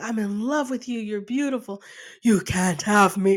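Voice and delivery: woman speaking in a put-on man's voice. Retelling a comedy sketch with a man dressed as a woman: imitating a man's voice in drag. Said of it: "And just like in a man's voice".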